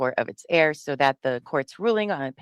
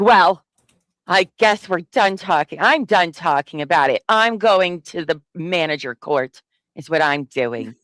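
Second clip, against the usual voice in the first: put-on childish sulk, petulant, huffed out loud; 6 dB louder than usual. Mocking the writer of an appeal filing, imitating a childish sulk. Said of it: "He's like a little child".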